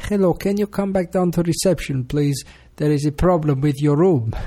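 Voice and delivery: imitated Greek accent. Phoning the children's rooms as if from reception, in a put-on Greek accent. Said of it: "put on my best Greek accent".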